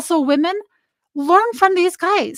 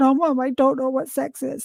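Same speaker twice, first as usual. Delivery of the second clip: put-on tearful crying voice, quieter; 3 semitones lower, 6 dB quieter than usual. Retelling a daughter's embarrassed answer to a question: imitating daughter crying. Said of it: "she got bright red and started crying".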